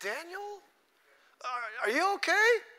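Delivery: mock very high, anguished, lamenting cry. Retelling how a man called out to Daniel the next day, retelling a lamenting call. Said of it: "he said in a lamentable voice".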